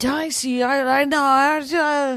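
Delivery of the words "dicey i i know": put-on drunk man voice. Retelling what a drunk guy said when confronted: imitating a drunk man. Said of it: "and he's just hammered".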